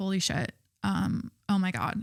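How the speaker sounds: slow, stunned, dumbstruck exclamation of shock. Retelling how he reacted on first seeing Half Dome: imitating someone in shock. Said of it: "so he, like, is in shock".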